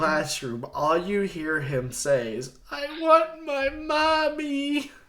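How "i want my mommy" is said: mock shrill, slow sob, mommy stretched. Retelling what he said walking out of the classroom: imitating someone crying. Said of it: "He's crying this whole time".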